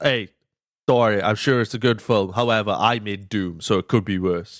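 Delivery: ordinary delivery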